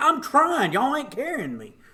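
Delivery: very high, swooping yell. Retelling a run while being pushed from behind: imitating own yelling. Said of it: "And I'm yelling".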